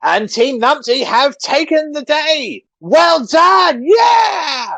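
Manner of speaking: very high, loud, stretched-out announcer shout. The narrator voices Wally addressing the crowd, Wally shouting. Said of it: "Wally shouts out".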